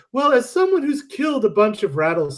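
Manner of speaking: light, high, piping, flute-like little voice. Recalling a woman from class, the speaker imitates her fluty little voice. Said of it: "She had this fluty little voice like this".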